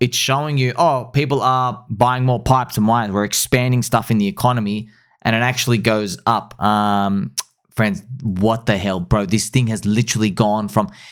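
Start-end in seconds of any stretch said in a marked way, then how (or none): none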